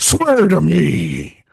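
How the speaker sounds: rough, creaky, gravelly caped-hero voice. Quoting a line from the film in the Batman voice. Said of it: "do the Batman voice".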